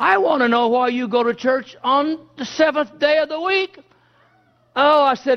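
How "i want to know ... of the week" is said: put-on keyed-up, demanding, pitched-up, mildly heated tone. Retelling how a man in a lumber store asked about church: imitating someone getting loud. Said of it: "he kinda got loud".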